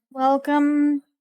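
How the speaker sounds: bored, uninterested, disengaged tone. Voicing a demoness at a library counter greeting a player: bored demoness voice. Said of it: "she's kinda bored".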